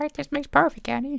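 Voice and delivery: put-on alien character voice. Told a line sounds like Jar Jar, the speaker repeats it in Jar Jar Binks voice. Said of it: "If you do that in Jar Jar's voice".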